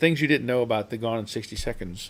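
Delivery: ordinary talk, nothing marked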